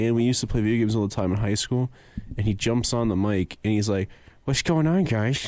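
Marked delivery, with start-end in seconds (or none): 4.4-5.5 mimicked open-mouthed speech, higher. Retelling a friend's greeting over the game mic: imitating talking with mouth open. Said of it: "talking with his mouth open".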